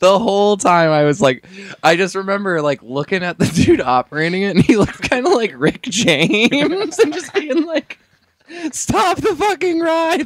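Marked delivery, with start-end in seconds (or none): 8.7-10.3 put-on very high, scared child's scream. Recalling being a child stuck on a ride, retelling a childhood scream. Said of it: "I'll never forget just screaming".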